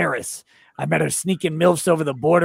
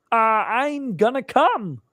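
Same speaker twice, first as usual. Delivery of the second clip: pitched up and dragged out; 7 semitones higher than usual. Reading a viewer's chat message that asks for it: Kermit voice. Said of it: "Also in Kermit voice".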